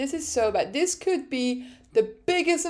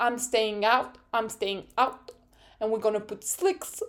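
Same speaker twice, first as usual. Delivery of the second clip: put-on French accent, racing driver voice; 2 semitones lower, 3 dB quieter than usual. Retelling a driver's radio call during a rainy race: Charles Leclerc accent. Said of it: "I'm trying to, to do Charles Leclerc accent".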